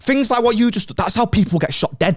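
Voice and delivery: put-on aggressive fuming man voice, very high pitch. Retelling a man getting in the speaker's face: imitating an aggressive man. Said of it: "getting right in my face".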